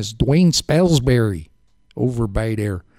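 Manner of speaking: put-on Chicago accent. Radio host trying out a name's pronunciation, in a Chicago accent. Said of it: "If I use my Chicago accent".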